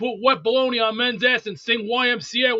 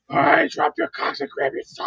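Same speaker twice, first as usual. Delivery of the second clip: put-on drill sergeant voice; 4 semitones higher than usual. Doing a drill sergeant bit when asked about a vote: Gunnery Sergeant Highway voice. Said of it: "should I sound like Sergeant Gunnery Highway".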